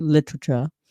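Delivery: 'literature' said affected, hoity-toity and posh. Showing how to pronounce it when being hoity-toity: hoity-toity posh 'literature'. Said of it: "that's how you have to pronounce it, by the way, when I'm being hoity-toity".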